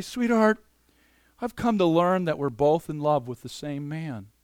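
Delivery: gentle, tender, sensitive delivery. Showing what to say to him sensitively one night in the living room: gentle voice. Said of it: "in a kind of gentle voice".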